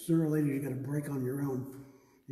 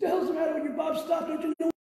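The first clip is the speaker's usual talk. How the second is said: mock yelling at a very high pitch; 4 dB louder than usual. Retelling a painting session with the speaker's dad and Bob, imitating dad yelling. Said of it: "my dad starts yelling".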